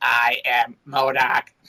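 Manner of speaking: mechanical, robotic, machine-like voice. Speaker demonstrates how an actor voiced MODOK: mechanical MODOK voice. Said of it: "the mechanical voice".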